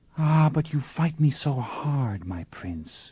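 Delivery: slow, soft, hushed half-whisper. Reading a story aloud, a woman answers her prince: half-whispering. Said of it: "she whispered".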